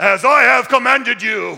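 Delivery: very loud, harsh, stern voice. Reading a bible verse as he used to hear it, mock-harsh tone. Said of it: "here's how I would hear the tone. This is the way it came across to me".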